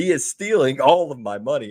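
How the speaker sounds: mock screaming. Imagining a player at a press conference, imitating someone screaming. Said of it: "and he's screaming".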